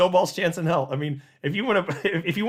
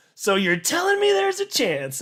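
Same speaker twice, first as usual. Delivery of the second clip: thrilled, high voice swinging pitch wildly; 12 semitones higher than usual. Reacting to a tiny chance with the movie line: thrilled Jim Carrey Dumb and Dumber line. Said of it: "I'm thrilled, right? Just like the character".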